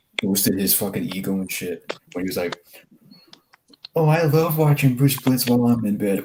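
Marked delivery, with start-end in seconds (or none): 4.0-6.2 high, put-on, voice-changer female voice. Retelling a channel intro made with a female voice changer: imitating a voice-changed female voice. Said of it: "one of those voice changers of a, of a female".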